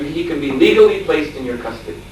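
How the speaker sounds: ordinary delivery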